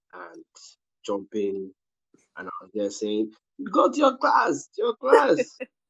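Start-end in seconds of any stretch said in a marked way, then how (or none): 3.7-5.6 very high, loud shout. Recalling children tapping and jumping on them, retelling a shout.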